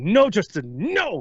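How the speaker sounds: mock angry strict dad voice. Retelling how they snapped at a player standing behind them, mock angry strict dad. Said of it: "like a really angry, strict dad".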